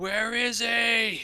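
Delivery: shrill, very high screaming. In character, getting into the church: screaming. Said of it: "I just want to like scream".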